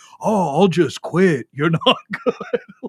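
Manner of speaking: different voice, dismissive. Retelling how he answers him, speaker imitates Chad's voice. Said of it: "I respond in the Chad voice to him".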